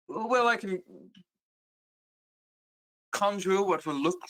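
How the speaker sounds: poorly done, clumsy, put-on British accent. Playing Damia, a player offers the group an idea, Damia in poor British accent. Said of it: "Damia does not have a poor British accent".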